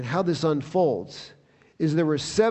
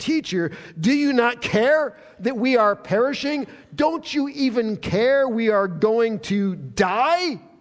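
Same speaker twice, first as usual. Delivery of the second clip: put-on reproachful, accusing, pitched-up, die drawn out; 6 semitones higher, 3 dB louder than usual. Retelling what they said after waking Jesus, in an accusatory tone. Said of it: "Do you catch the accusatory tone in there?".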